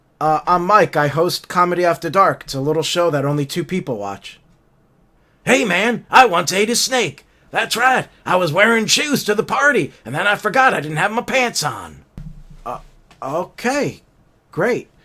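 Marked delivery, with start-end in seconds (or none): 5.5-12.1 put-on elderly politician voice. Greeting the show's host as the vice president: Joe Biden impression. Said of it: "welcome to the show, Joe Biden".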